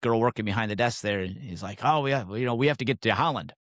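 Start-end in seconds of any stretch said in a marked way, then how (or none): 1.8-3.5 put-on heavy German accent, laid on thick. Retelling a man talking to the girl behind the desk, in a thick german accent. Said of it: "with his very thick German accent".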